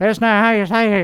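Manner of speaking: fast, put-on fake Texan accent. Mocking how a native texan would correct them: mock texan accent. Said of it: "some Texan asshole who lives here natively".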